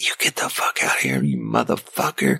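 mock rough, hostile, angry man hollering. Retelling a man holding a screaming kid who hollers at you, retelling his hollering. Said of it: "starts hollering at me".

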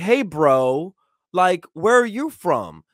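put-on smug voice. Retelling how an educated guy questioned a homeless man: imitating a smug questioner.

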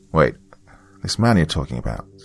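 plain reading voice

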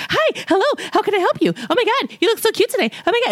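over-bubbly, gushing, very high-pitched shop-worker voice. Imitating annoying grocery store employees: imitating overly excited cheerful staff. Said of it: "annoying people that are just like".

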